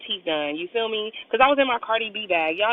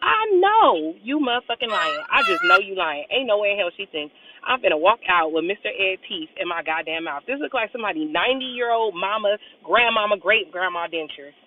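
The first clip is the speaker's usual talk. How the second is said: normal talking voice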